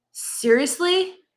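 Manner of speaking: mock exasperated huff. Retelling what the kids say to each other: imitating an exasperated huff. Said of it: "Complete with the huff and the eye roll".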